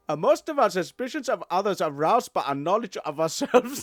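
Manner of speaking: put-on Egyptian accent. Reading a quote aloud for the other to guess the accent: put-on Egyptian accent.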